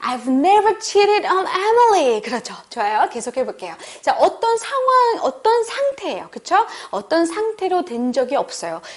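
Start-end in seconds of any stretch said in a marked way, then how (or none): 0.0-2.2 high, indignant, aggrieved, wronged tone. Acting exercise, repeating the line with a wronged feeling: aggrieved, wronged tone. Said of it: "우리 정말 억울한 그 심정으로 다시 한번".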